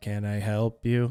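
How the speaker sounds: put-on flat bored monotone, very dull, low, slow. Retelling a man wiping glasses who answers, imitating a very dull voice. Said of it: "he says in a very dull voice".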